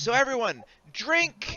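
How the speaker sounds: very high voice with swooping, swinging pitch. Voicing Nemi opening a rum barrel for everyone: Nemi voice. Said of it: "and she says".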